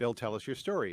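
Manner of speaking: usual speaking voice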